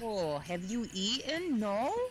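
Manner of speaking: put-on Upper Peninsula Michigan accent. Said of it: "I was trying to do a youper voice".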